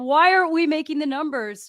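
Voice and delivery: play-acted furious, angry screaming and yelling. Act out a guy who comes into the room and goes at everybody, imitating his screaming. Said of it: "he's screaming at everybody".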